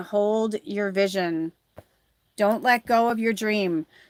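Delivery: ordinary delivery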